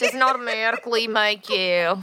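accidental Southern accent, slipping in suddenly.

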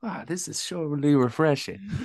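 high Southern woman voice. Mocking how Sonny Gray sounded when interviewed, Sonny Gray as a Southern lady. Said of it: "More like a Southern lady".

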